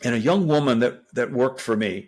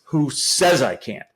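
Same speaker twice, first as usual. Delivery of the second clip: forceful, emphatic exclamation stressing "can't". Rephrasing a line usually ending in a question mark: exclamation, not a question. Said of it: "I like to say it like this: ... So then it's got an exclamation point, not a question mark".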